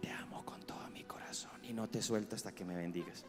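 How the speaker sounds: gentle, soft, quiet whisper, very close. The speaker shows how he whispers to his wife: whisper. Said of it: "voy a susurrarle a mi esposa".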